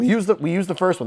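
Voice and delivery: high voice breaking mid-phrase. Working through an equation on a recording, with a voice crack. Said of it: "That was a voice crack".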